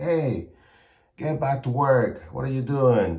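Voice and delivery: distant-sounding scolding scream. Retelling how a father yelled across the street: imitating father screaming. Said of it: "he screamed at me".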